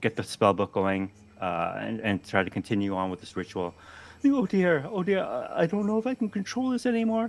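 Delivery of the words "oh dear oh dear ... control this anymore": very high, flustered, fretting and stumbling over words. A narrator voices Professor Solarberry scrambling on the ground during a ritual, flustered. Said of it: "Professor Solarberry on the ground now, trying to scramble".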